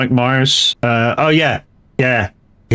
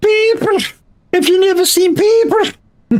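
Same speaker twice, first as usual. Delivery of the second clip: very high, slow, awful fake Scottish accent. Retelling a film scene of trading on the water: terrible scottish accent. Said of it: "Terrible accent".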